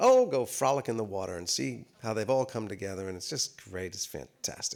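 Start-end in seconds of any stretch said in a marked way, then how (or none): none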